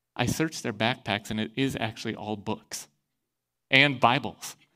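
soft half-whisper, under the breath. Retelling what the officer's partner reported: imitating a half-whisper. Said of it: "his partner comes up and whispers".

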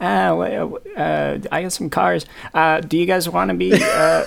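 put-on high, creaky voice, slow and drawn out. Retelling how Ghost Jay Leno appears in a show: Jay Leno impression. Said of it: "Jay Leno comes out, and he's like".

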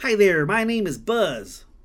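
put-on high, eager backcountry Texan accent, laid on thick. Retelling a shop owner greeting the visitors, in Buzz's backcountry Texan accent. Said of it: "In a deep backcountry Texan accent".

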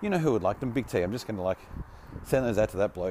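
ordinary delivery

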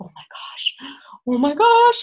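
mock hysterical starstruck-fan cries, high and loud. Retelling how everybody around Michelle reacted, imitating hysterical fans. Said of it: "Everybody's like hysterical".

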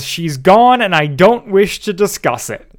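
sudden, high, fed-up yelling outburst. Recounting a scene where a character flips out and leaves, retelling a yell. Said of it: "He just yells".

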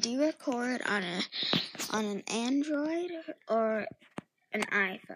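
normal talking voice

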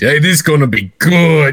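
put-on New York accent. Imitating a Tonys announcer: NYC Guido voice. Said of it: "N Y C Guido voice".

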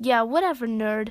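ordinary delivery

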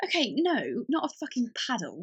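plummy, posh, sing-song voice. Reacting to a friend mentioning a paddle: posh-sounding voice. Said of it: "Why do I sound so posh right now?".

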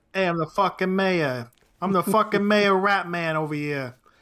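put-on Boston Southie voice. Riffing on a bit where the mayor turns into the Rat Man; Rat Man Southie voice. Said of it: "What's a Rat Man Southie voice?".

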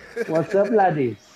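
loud, high, fake Irish accent. Joining in as others joke about an Irishman, in a fake Irish accent. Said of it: "you do pretty good".

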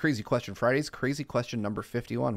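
ordinary talk

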